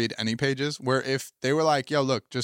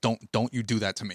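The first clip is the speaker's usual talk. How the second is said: angry, scolding teacher voice, outburst; 3 semitones lower than usual. Retelling how a teacher reacted in class: imitating an angry teacher. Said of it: "you just saw the anger right in his face".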